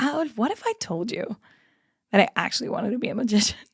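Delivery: put-on earnest, dead serious, swooping pitch. Retelling asking her boyfriend about becoming a magician: imitating a straight-faced question. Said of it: "Like, straight face".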